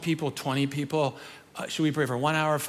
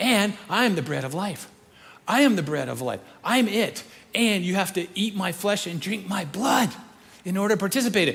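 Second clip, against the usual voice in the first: getting worked up, speaking in a higher pitch; 3 semitones higher, 4 dB louder than usual. Retelling Jesus's words about the bread of life, imitating Jesus getting worked up. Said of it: "he gets worked up".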